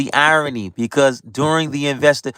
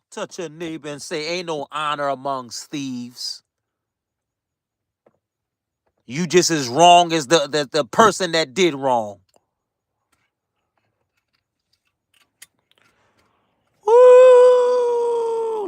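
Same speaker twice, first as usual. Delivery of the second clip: worked up and fired up. Preaching to viewers about casting the first stone, worked up. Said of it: "Let me calm down".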